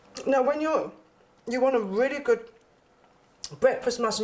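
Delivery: speaking with mouth full, chewing. Tasting a breakfast muffin on camera for viewers, mouth full, chewing. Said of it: "you can see that I'm chewing".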